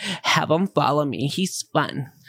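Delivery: sultry, drawn-out, seductive come-hither voice. Mocking how Steph just said it, imitating Steph's sexual voice. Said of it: "Steph just said it with her sexual voice".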